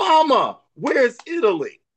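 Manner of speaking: yell, high and swooping. Retelling calling to a grandmother in the kitchen: retelling a yell. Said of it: "I remember yelling to my grandmother".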